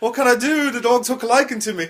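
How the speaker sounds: bad put-on Welsh accent. Telling a joke, voicing a drunk man speaking to a couple, in a bad Welsh accent. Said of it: "he was Welsh?".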